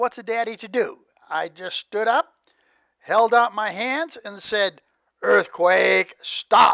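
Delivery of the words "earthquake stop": mock firm, commanding, authoritative in-charge voice. A father retells ordering the earthquake to stop while his daughter clings: retelling an authoritative command. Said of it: "in my authoritative voice".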